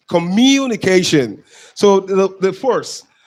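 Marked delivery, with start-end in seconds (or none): 0.1-1.4 communication with the syllable mu stressed. Explaining word stress in a lesson, stress on mu in communication. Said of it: "The stress syllable is in block letters. That's why it is M U".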